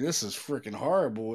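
ordinary talk, nothing marked

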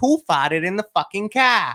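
mock elderly woman Boston accent. Retelling what a grandmother driving the car said: imitating grandma's thick Boston accent. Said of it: "this super thick Boston accent".

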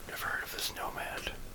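soft, toneless whisper.

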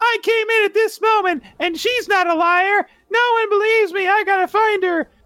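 put-on very high little girl voice. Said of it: "And Heidi's like".

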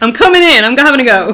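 brash, loud voice.

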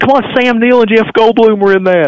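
mock screaming, very high yell. Recalling screaming the actors' names at the phone, retelling a scream. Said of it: "I was like screaming out the actor's name".

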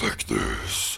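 very demonic, whispered voice. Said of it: "Travis immediately starts echoing her in a voice".

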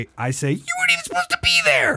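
really high-pitched squeaky voice. An actor retells a line he said in a DEA scene, in a really high-pitched voice. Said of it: "in this really high pitched voice".

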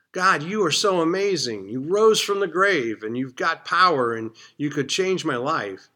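high-pitched, passionate, excited outpouring. Showing how to thank God, excited and passionate. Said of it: "You need to be excited about it".

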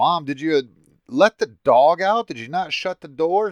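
loud, high-pitched yelling. Retelling coming out yelling at his mom after seeing the dog on the roof, retelling a yell. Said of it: "I come out yelling at her".

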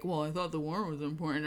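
acted under-breath mutter. Recapping a story, acting out a character's line muttered under her breath. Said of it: "literally under her breath is like".

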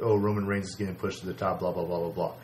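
ordinary talk

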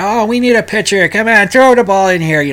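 put-on loose, high Brooklyn accent. Acting out a kid at bat in sandlot baseball, imitated Brooklyn accent. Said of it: "he's talking in a Brooklyn accent about ... Don't go by my impression".

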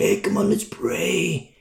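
hushed, whispery, breathy, slow cool-guy voice. Mocking young pastors who talk like rock stars: mock cool rock-star voice. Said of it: "They try to do their cool voice".

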